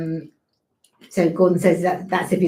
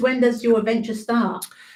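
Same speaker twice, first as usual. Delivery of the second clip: normal talking voice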